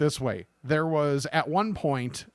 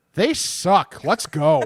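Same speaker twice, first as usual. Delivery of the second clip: raised, loud, slow, deliberate, blunt tone; 6 dB louder than usual. Retelling what an older lady said to her husband: imitating someone saying it really loud. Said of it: "really loud".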